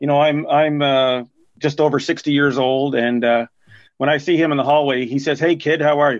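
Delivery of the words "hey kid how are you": imitated gruff voice. Retelling how a former coach greets him in the hallway, imitating his gruff voice. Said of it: "and it's in his gruff kind of voice".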